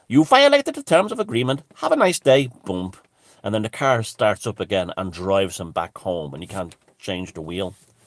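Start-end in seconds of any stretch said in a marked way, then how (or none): 0.1-2.5 put-on high, swooping, automated Indian accent. Acting out an automated system replying to a caller, in an automated Indian accent voice. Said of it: "I am the automated Indian voice".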